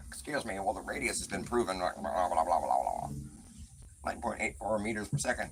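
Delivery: put-on grumbling, fed-up, disgruntled robot voice. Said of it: "sounds like a disgruntled C three P O".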